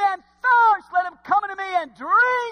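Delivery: impassioned, loud crying out, pitched very high. A preacher voices Jesus's words to the congregation, retelling a cry. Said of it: "He cried out".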